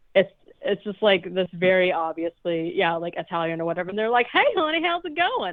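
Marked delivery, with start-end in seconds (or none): 4.3-5.5 put-on high-pitched southern US accent. Describing a dub's voice actor, a speaker imitates their line in a southern accent. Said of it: "the person that they got is like southern sounding".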